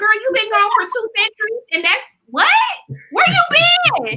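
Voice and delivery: mock exasperated, loud yell.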